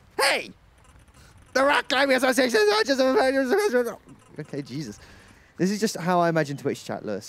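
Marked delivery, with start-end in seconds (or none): 0.2-4.0 shouting. Reading a game character's line aloud: shouting. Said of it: "he's just shouting down".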